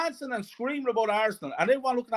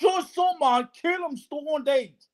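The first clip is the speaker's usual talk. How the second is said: high-pitched screamed outburst; 6 semitones higher, 3 dB louder than usual. Retelling watching the cup semi-final, reenacting own screaming. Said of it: "That's what I was screaming".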